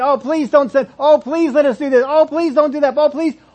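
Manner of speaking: beseeching, begging demon voices, pleas piling up. Acting out demons begging Jesus all at once: acting out demons begging. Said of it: "And if they're begging".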